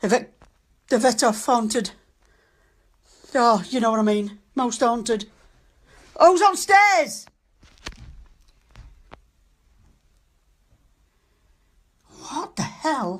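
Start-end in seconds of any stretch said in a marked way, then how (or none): 6.2-7.3 startled, high, drawn-out shout. Hearing someone on the stairs in the dark: shouting. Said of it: "I'm sorry for shouting".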